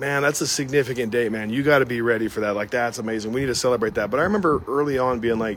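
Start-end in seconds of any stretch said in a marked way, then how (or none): none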